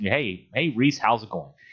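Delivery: ordinary delivery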